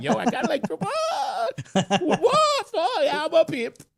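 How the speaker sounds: very high, laughing, boastful. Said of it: "I was like".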